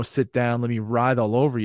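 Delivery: plain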